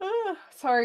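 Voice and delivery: high yawning groan. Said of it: "I'm yawning on camera".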